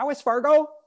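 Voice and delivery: shrill, very high, very loud, panicky blurt. Quoting the wife's first line in the movie: imitating Kristin Rudrüd's panicked tone. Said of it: "she's already panicked".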